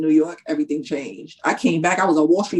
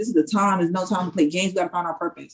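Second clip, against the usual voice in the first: ordinary talk, nothing marked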